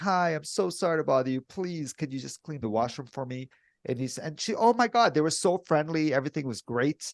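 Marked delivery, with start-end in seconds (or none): 0.0-3.5 mock-innocent, meek, polite tone. Retelling asking a lady to clean the washroom, acting out a timid request. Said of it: "I'm really innocent. I don't want any problems".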